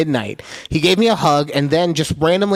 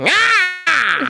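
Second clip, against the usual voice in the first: high, hyper, yelping outburst. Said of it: "this one has me just wanting to go like".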